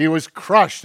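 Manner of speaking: emphatic, loud, hard stress on crushed. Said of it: "and the word is crushed".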